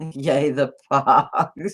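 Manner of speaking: talking through laughter. Reacting to something in the chat, laughing while talking. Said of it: "Sorry, I'm laughing".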